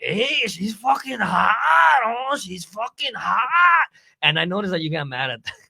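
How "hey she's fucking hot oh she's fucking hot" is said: put-on drunk East LA accent, higher and louder. Retelling own repeated remark after drinking: imitating own drunk East LA accent. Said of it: "like an East L A accent comes out".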